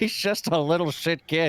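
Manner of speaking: very slow, cackling delivery. Voicing a character dismissing a young mage: cackling under his breath. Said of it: "cackles under his breath".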